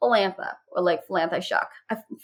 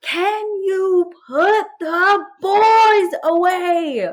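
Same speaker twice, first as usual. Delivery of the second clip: play-acted very high, slow, top-of-lungs scream; 11 semitones higher, 4 dB louder than usual. Retelling screaming at someone to put the boys away: retelling screaming at top of lungs. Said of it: "screaming on the top of my lungs".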